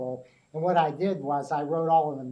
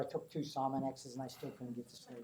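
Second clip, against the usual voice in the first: normal talking voice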